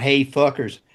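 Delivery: ordinary talk, nothing marked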